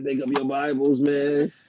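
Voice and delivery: put-on acted drunk preacher voice. Imitating an online reverend who always sounds drunk: imitating Reverend Green sounding drunk. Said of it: "the way he be speaking, man, he be rolling".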